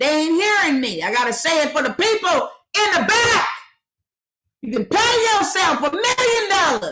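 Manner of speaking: very high, fired-up, passionate hollering. Speaker explaining to the audience why they holler, hollering. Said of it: "why you got to holler".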